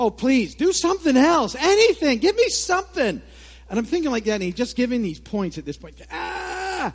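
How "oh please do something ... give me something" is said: very loud, rising, fed-up pleading yell. Retelling talking to a recording, yelling at it. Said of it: "I'm yelling at the thing".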